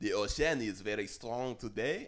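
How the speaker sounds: English spoken with a French accent. Naming the accent, then saying a line in a french accent. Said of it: "It's a French accent".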